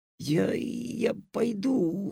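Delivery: husky, hoarse, rasping voice. Alyosha, uneasy at Madam Greed's smile, answers her, hoarsely. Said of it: "хрипло сказал Алешка".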